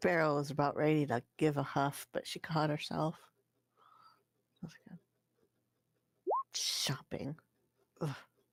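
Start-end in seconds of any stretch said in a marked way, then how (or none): 4.6-8.2 hushed grumbling mutter under the breath. Voicing Beryl, who catches herself before huffing; muttering under breath. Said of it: "saying that mostly under her breath".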